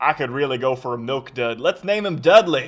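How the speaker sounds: put-on homespun rural British accent. Mocking the parents who named their child Dudley, Dursleys in hick British accent. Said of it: "like a hick British accent".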